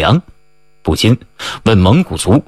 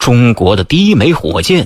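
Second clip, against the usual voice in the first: ordinary delivery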